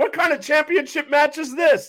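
high, loud announcer voice, belted like a ring announcer. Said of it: "do his announcer voice".

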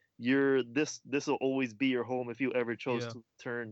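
plain

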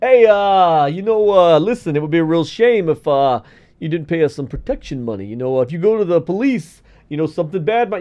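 low, halting mobster voice, full of uhs. Acting out a mafia thug threatening a shop owner: imitating a mafia thug. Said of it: "the mafia burns down your shop and goes".

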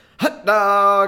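loud hawking call. Retelling a hot dog seller doing an American baseball game impression: imitating a baseball game vendor call. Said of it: "he did a little American baseball game impression".

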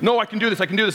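frustrated, stubborn, dug-in insistent tone. Retelling how Miles insisted at the table: imitating Miles's frustrated voice. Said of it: "It's pretty much what his voice sounds like".

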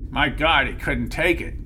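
ordinary talk

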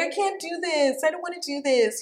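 put-on whining, high, whiny little-kid voice. A mom retelling how her kids complain, imitating a whiny kid voice. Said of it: "that little whiny kid voice".

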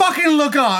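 acted exasperated scream. Retelling screaming at the TV while watching: imitating own screaming at TV. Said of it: "I'm screaming at the T V".

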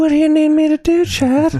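very high-pitched, creepy pervert voice. Mocking a clip while watching it: Family Guy pervert voice. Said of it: "She sounds like the pervert in Family Guy".

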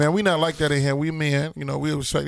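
normal talking voice

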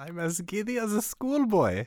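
put-on, fake German accent. Speaking as a would-be new Führer: fake German accent. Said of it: "using his fake German accent".

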